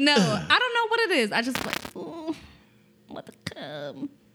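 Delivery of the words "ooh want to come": put-on, breathy, whispered moan. Showing another speaker how a fake moan sounds: fake moaning. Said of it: "what does your fake come moan sound like?".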